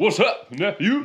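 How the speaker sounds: very high-pitched, robotic, AI-sounding voice. Imitating how uncles used to greet a nephew, in an AI-sounding uncle voice. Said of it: "Why did it sound like an AI uncle?".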